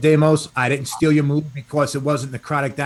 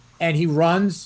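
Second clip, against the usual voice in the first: plain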